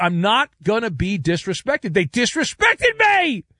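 high, rising angry yelling. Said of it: "he yelled".

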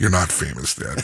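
put-on deadpan, low pitch, zero reaction. A father retells his son's remark after sitting down on the airplane; imitating son's deadpan.

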